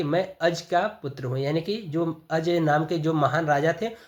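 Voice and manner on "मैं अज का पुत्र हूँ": ordinary talk, nothing marked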